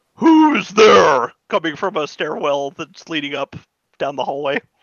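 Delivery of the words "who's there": strongly manly, loud, very masculine voice. Narrating to players, voicing someone calling from a stairwell: very masculine voice. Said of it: "a very uh, masculine voice say".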